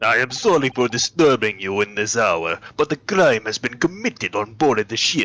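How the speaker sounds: put-on Russian accent. Game streamer voicing a ship's seaman reporting a crime on board, in a put-on Russian accent. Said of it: "Hello, it's me, a Russian man. / a Russian man. / Become Russian. / a Russian man".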